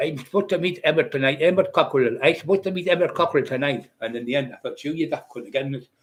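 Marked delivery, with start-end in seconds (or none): 0.0-3.9 put-on Pakistani accent. Retelling what someone said in a story: Pakistani accent impression. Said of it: "from this Pakistani like, accent".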